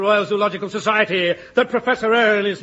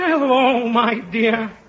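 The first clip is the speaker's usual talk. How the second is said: put-on elderly old man character voice. Telling a listener which voice the speaker will use, in an old man's voice. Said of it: "My old man's voice".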